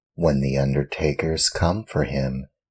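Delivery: ordinary delivery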